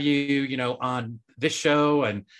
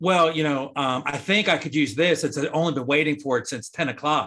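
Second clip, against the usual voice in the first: ordinary talk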